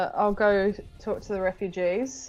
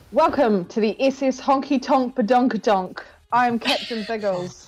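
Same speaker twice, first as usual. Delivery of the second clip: booming voice; 4 semitones higher, 3 dB louder than usual. Player walking in to announce himself to the survivors aboard, booming Captain Biggles voice. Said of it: "shout out in a booming voice".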